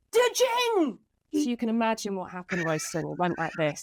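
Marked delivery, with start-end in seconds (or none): 0.1-0.9 play-acted very high, shrill screeching scream. Telling Royston what someone screamed down the mic; retelling a scream down the mic. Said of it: "screamed down the mic".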